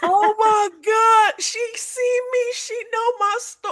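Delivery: mock very high, drawn-out, blubbering ugly crying. Retelling a breakthrough while reading a romance book: imitating own past ugly crying. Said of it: "I was ugly crying".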